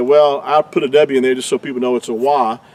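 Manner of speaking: ordinary talk, nothing marked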